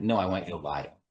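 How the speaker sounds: low, dry, deadpan sarcastic tone. Retelling a TV scene where House answers an intern: imitating House's deadpan sarcasm. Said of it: "sort of deadpan".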